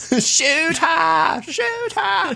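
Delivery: very high-pitched, slow, dragged out and urgent. Quoting the opening scene of Jurassic Park: Jurassic Park opening scene impersonation. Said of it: "That was a good impersonation".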